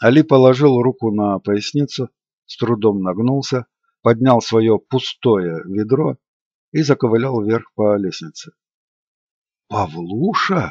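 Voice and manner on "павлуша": shocked, stunned, lower and quieter. Narrator reading a character repeating a name he just heard, shocked. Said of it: "повторил Олег потрясенно".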